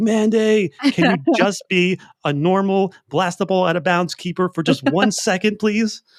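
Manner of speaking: high-pitched, loud yell. Retelling a moment watching the game: imitating own yell at the TV. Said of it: "I remember just yelling at my T V like".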